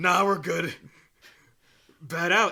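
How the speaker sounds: silly loud hero voice. Batman answers the police commissioner on a roof, in a silly Batman voice. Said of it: "silly voice Batman".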